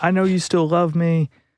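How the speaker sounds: mock all-out frenzy, high, frantic ballistic yelling. Retelling what a woman kept shouting at him, imitating someone going ballistic. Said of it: "going ballistic".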